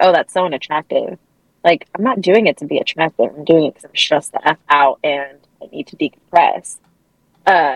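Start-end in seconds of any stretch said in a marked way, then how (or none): none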